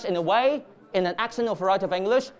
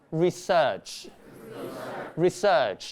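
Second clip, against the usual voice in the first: British pronunciation of "research"; 4 semitones lower than usual. A university teacher demonstrates a word's pronunciation in a British accent.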